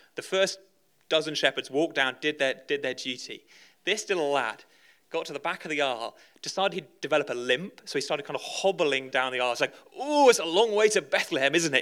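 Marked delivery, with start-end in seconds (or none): 9.9-11.8 put-on Northern accent, pitched higher. Telling of a little shepherd boy hobbling down the aisle, in a mock northern accent. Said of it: "In a kind of mock northern accent".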